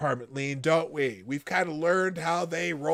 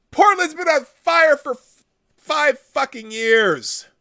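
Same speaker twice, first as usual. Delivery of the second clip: shrill, very high, loud, blown-out shouting; 9 semitones higher, 7 dB louder than usual. Speaker reacting to a news report for supporters, yelling. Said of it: "Sorry, I'm yelling again".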